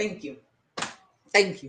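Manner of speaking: choked up, fighting off tears. Thanking viewers for their support, holding back tears. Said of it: "I'm not crying".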